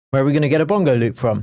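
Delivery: fast, wired, over-caffeinated rattled-off chatter.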